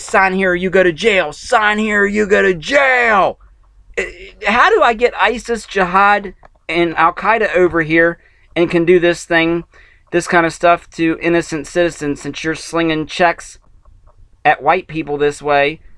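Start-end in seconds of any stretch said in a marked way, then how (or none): 0.0-3.4 imitated screaming with the word "jail" dragged out. Retelling what a magistrate screamed with armed men around: imitating someone screaming. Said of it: "he's screaming at me".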